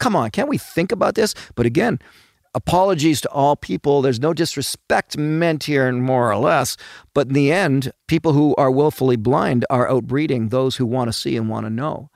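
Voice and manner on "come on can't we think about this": exasperated, audibly fed up, pitched up. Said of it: "If you can hear it in my voice".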